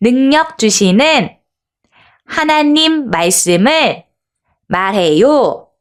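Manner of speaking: clear, slow, word-by-word reading. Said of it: "또박또박 한번 읽어볼게요".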